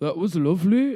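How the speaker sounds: put-on accent from Northumberland. Retelling what a man said as he left, in a monotone Northumberland accent. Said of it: "he said it in a really Northumberland accent".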